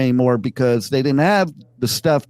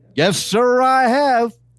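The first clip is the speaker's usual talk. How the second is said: very high, slow, emphatic swaggering cowboy drawl; 9 semitones higher than usual. Recounting how a man answered, the speaker is retelling an emphatic answer. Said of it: "he was so emphatic about it".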